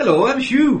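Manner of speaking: clumsy, bad Welsh accent, very high. Trying a Welsh accent after saying it can't be done: bad Welsh accent. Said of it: "I can't do a Welsh accent".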